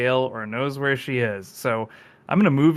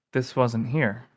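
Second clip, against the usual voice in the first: put-on muttering under breath to himself. Describing a man rooted to the spot, afraid to step, acting out muttering under breath. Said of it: "he's just saying under his breath".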